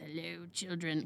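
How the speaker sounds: put-on creepy older man voice. Retelling how an older man opened the car door: imitating a terrifying older man's voice. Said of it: "has this voice that's a little terrifying".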